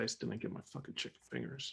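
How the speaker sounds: whispered mutter under the breath, as to oneself. Grumbling in character while leaving: muttered under the breath. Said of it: "Underneath my breath".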